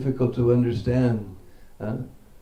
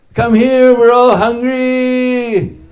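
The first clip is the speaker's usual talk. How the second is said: shouted call, higher and louder; 12 semitones higher, 12 dB louder than usual. Retelling the cowherd boys calling for Krishna in the forest: calling out across the forest. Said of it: "And they all call".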